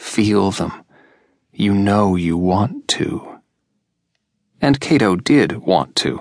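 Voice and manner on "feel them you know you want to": said huskily. Larcy speaks to Cato, smiling suggestively; husky voice. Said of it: "Larcy said huskily".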